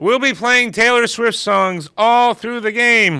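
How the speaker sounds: mock ballpark announcer voice. Retelling what the announcer said at the baseball game: imitating a ballpark announcer. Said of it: "the announcer comes on and goes".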